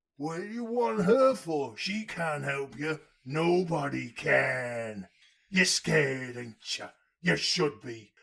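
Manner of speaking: put-on slow, old man Somerset pirate-sounding voice.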